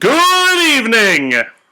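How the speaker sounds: shrill, very loud, high-pitched hearty yell. Retelling waking up and greeting someone: imitating own yell. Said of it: "woke up and I just yelled".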